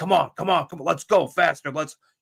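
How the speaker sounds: encouraging yell, kept mild. Retelling a player yelling at the position coach running a drill: imitating someone yelling. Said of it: "he's yelling at the coach".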